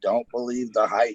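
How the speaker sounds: ordinary talk, nothing marked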